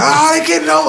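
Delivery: mock very high-pitched shrieking scream. Speaker retells driving in a storm as semis cut over, retelling a scream. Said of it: "I'm screaming".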